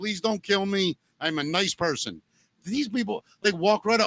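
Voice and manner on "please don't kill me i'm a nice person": put-on apologetic, pleading, begging tone. Imagining walking through a rough neighborhood, mock apologetic pleading. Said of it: "with my hands in the air, apologizing".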